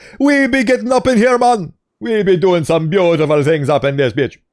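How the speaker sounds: put-on Jamaican accent. Showing off a favorite accent after praising it: put-on Jamaican accent. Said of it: "the Jamaican bomba clat accent".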